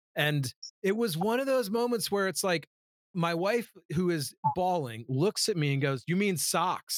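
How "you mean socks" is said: put-on sudden, mild, emphatic blurted outburst. Retelling the wife's remark during the blooper moment: imitating someone saying it loud. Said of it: "Like, loud".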